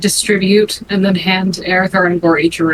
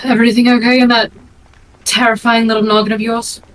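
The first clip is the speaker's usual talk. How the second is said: acted whisper, higher pitch; 3 semitones higher than usual. Speaking in character to another character, leaning against the bar: whispering in character. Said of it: "she kinda drops her voice to a whisper".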